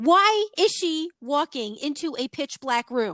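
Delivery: play-acted, high-pitched shouting. Recalling watching a film, the speaker acts out yelling at the screen: retelling yelling at the screen. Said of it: "I'm yelling at the screen".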